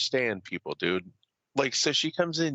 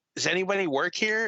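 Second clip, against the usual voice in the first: mock irritated, put-upon, huffy, pitched-up tone; 6 semitones higher than usual. Retelling a story about a woman pounding on a desk, mock-huffy question. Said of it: "Comes in all like huffy".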